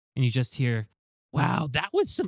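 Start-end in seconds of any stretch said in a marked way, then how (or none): 1.3-2.3 high-pitched gnome woman character voice. Voicing a gnomish woman climbing from the rubble: gnomish woman voice. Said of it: "it's a gnomish woman's hand".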